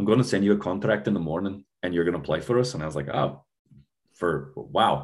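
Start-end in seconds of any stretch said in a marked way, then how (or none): 0.0-2.7 put-on fast, broad, thick Scottish accent, laid on heavy. Retell the team captain's Friday night call to you, in Alan's real big Scottish accent. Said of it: "he's like a real big Scottish accent".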